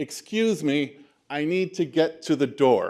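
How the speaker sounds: loud booming voice. Illustrating how to get through a crowded room to the door; loud, booming voice. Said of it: "in a loud, booming voice".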